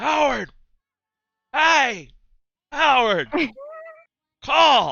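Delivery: drawn-out bellow, very loud and very high. Storyteller voices a character leaning away and calling out, shouting as loudly as possible. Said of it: "shouting like as loudly as he can".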